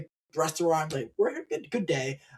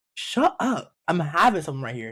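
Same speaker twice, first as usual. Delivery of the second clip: put-on, disbelieving, incredulous shut-down tone; 4 dB louder than usual. Acting out a retort to a woman who shushed people: looking at her like she's crazy. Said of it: "look at her like she's crazy and be like".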